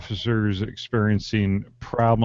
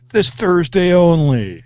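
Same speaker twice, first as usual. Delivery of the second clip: very high, loud show host announcer voice; 9 semitones higher, 8 dB louder than usual. Slipping briefly into host voice mid-conversation. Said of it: "you went to your host voice there".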